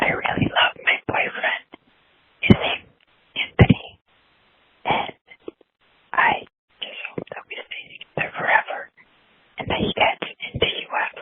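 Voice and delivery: whispering. Telling how much she loves her boyfriend while he plays nearby: whispering. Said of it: "I'm whispering because he's playing".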